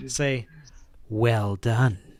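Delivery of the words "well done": sly, creeping, insidious inner voice. Game narrator voicing a voice suddenly heard in a player's head: creeping, insidious voice. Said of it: "this creeping, insidious sensation".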